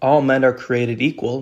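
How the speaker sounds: ordinary delivery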